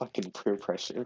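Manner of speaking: low grumbling mutter under the breath. Player puts his drink down and comments; muttered under breath. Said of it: "I say under my breath".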